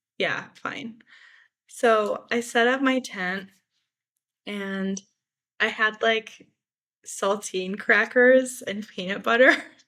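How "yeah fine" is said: put-on half-whispered, soft, lukewarm, unenthusiastic. Retelling asking a woman if they could camp, the speaker quotes her: imitating an unexcited reply. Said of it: "She's not quite as excited to see me".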